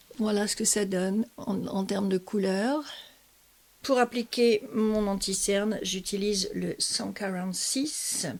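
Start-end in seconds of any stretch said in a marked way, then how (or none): 6.8-8.3 cent quarante-six said in an English accent. Naming the 146 used for concealer, english accent on "cent quarante-six". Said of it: "Pourquoi je vous dis ça avec un accent anglais?".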